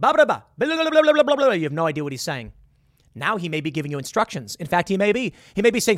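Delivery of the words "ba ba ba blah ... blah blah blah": high-pitched, loud, shouted foreign-sounding gibberish. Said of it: "he would go".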